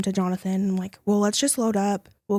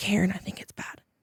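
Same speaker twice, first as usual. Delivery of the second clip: put-on whisper, much quieter; 4 dB quieter than usual. Retelling a call to her sister after losing her voice; retelling a whisper. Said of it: "I can only whisper".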